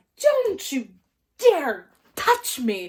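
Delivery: very loud, furious, swooping, drawn-out outraged voice. Retelling how Bill snapped after a costume tail bopped him: imitating Bill furious. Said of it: "And Bill is just going off".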